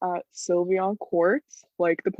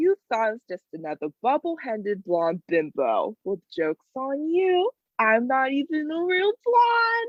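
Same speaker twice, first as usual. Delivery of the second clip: high, swooping, sing-song cartoonish voice; 6 semitones higher than usual. Acting out a character's line after being asked to impersonate. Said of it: "She goes".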